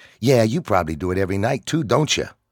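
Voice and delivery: pointed, snapping-back tone. Mocked in front of the group, a character fires back; retorting. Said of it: "Paul retorted".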